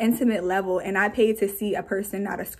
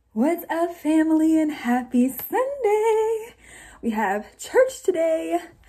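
breathless, slow, high, very drawn out; 8 semitones higher than usual. Greeting viewers at the start of a video: out of breath. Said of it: "Why am I always out of breath every time I get on this camera?".

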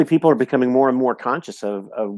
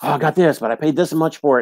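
put-on thrilled, eager, boastful excitement; 3 semitones higher than usual. Retelling the son bringing in a jar of oil: imitating excited speech. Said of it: "so excited".

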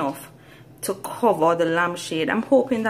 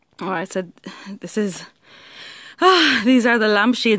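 breathless, panting, out-of-breath words; 2 semitones higher, 4 dB louder than usual. Returning to show viewers the finished lampshades, speaking out of breath. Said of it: "I'm out of breath".

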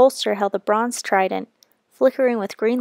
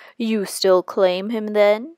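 menacing, slower. Zeus puts a question to Poseidon: menacing. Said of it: "Zeus asked menacingly".

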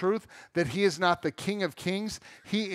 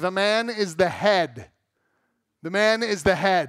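clumsy, slow, put-on bad Greek accent; 4 dB louder than usual. Quoting the husband from a film, in a bad Greek accent. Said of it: "I can't do a good Greek accent".

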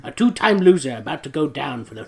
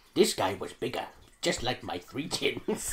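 very quiet, hushed crime-boss voice; 3 semitones lower, 10 dB quieter than usual. Reading the narration aloud, speaker continues in a Kingpin voice. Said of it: "I'm going to switch the voice to the Kingpin".

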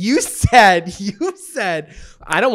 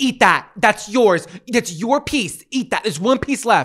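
mock pushy, insistent shouting; 4 semitones higher than usual. Imitating someone at a restaurant table who feels the need to shout: imitating someone shouting. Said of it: "they feel the need to shout".

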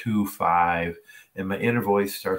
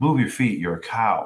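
imitated quiet speaking voice. Retelling the coach leaning in while walking by: imitating the coach speaking quietly. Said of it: "real quiet".

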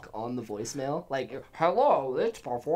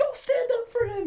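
very high, shrieking scream; 4 dB louder than usual. Retelling a boss screaming at them at the shop: imitating Lala screaming. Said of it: "Remember when Lala was screaming at me?".

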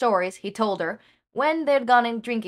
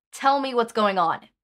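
put-on stern, firm, older-sister manner. Romy demands that Hawks explain what's going on, in a stern older-sister voice. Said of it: "put on her best stern, older sister voice".

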